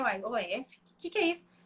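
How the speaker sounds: ordinary talk, nothing marked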